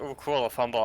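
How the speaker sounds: ordinary delivery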